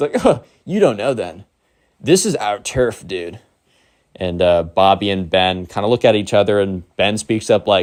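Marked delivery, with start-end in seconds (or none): 0.2-3.4 put-on, scornful, mocking laugh. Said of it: "the emo kid laughs".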